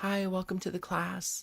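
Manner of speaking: soft, shy, hushed and quiet voice. Describing a shy, quiet teacher welcoming young kids, imitating a shy, quiet teacher. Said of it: "But she's like very like".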